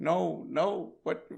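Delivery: high, loud, tearful, desperate crying voice. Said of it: "You're like".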